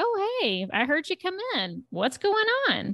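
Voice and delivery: acted, very high, offhand, easygoing, breezy sing-song voice. Retelling a character walking in unannounced: imitating a nonchalant tone. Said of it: "says just very nonchalantly".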